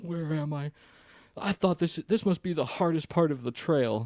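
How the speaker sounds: mock weepy, teary, high crying voice. Retelling how a man ran out of the bathhouse: imitating someone crying. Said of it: "He's, like, crying".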